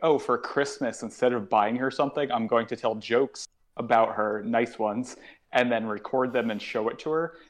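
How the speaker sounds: ordinary delivery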